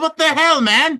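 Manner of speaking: very high, shrill, very loud yelling outburst. Playing a character yelling at an ally during a fight: yelling. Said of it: "while I'm yelling all that".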